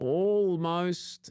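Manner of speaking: almost stretched out, high and loud. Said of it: "I do underline the word almost".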